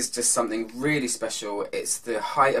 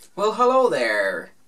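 American accent, worn for show; 6 semitones higher, 6 dB louder than usual. Greeting everyone at the start, speaking in an american accent. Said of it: "American accent today".

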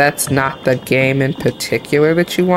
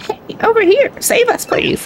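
toad voice, pitched very high. Voicing a character during a recording session, in a toad voice. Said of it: "I can actually do the toad voice".

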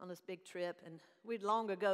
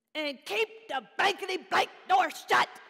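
clear, shrill, very loud, hateful voice; 12 semitones higher, 14 dB louder than usual. Retelling what they said to her after slamming the car door, reenacting a loud hateful voice. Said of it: "in a clear, loud, perceived as hateful voice".

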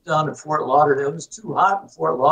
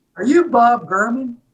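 put-on heavy, laid-on thick Southern accent, pitched up; 8 semitones higher, 3 dB louder than usual. Retelling what a volunteer asked him at the door, in a thick Southern accent. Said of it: "with a thick Southern accent".

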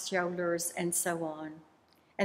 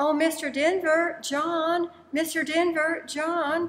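very high, loud, very slow, drawn-out hollering shout; 9 semitones higher, 5 dB louder than usual. Retelling how a woman called out to a performer in a restaurant, retelling a loud shout. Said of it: "began to shout loudly".

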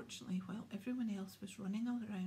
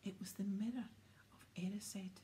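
ordinary delivery

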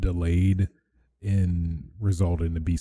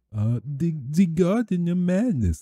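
mock, put-on German accent; 11 semitones higher than usual. Mentioning what they also showed, in a put-on German accent. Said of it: "That's my German accent".

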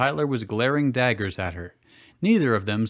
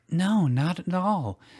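kind, gently reassuring, much higher, slower; 6 semitones higher than usual. Serena answers the nervous young girl, kind and reassuring. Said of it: "Serena reassured the young girl kindly".

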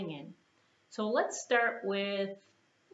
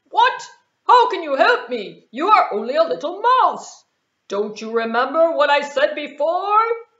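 very loud, high, incredulous lion voice; 7 semitones higher, 15 dB louder than usual. Reading a story aloud, voicing the trapped lion answering the mouse, disbelieving lion voice. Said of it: "What in the world could you do for this jungle king?".

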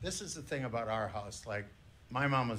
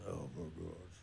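mock very low, soft grumbling under the breath; 7 semitones lower, 9 dB quieter than usual. Speaker retells her dad's reaction to a cup of coffee, imitating his grumbling. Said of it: "My dad grumbles".

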